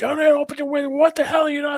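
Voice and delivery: shrill, very high-pitched screaming. Retelling what a state trooper yelled after the pull-over: imitating someone screaming. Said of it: "starts screaming".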